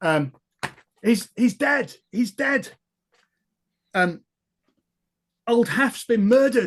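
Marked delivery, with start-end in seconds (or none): 1.0-6.7 raised, high, drawn-out alarmed shout. Voicing a bystander who shouts out news of a murder: someone shouting. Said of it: "you hear a shout up".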